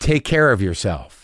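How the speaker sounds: low, loaded, ominous tone heavy with hidden meaning. Retelling what he said as the speaker walked out; retelling a loaded tone. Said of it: "Did you hear my tone just then?".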